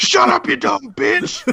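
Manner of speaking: play-acted very high, scratchy, rough, furious outburst. Retelling a movie scene where a pimp character snaps: imitating a character screaming. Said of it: "he screams. He's like".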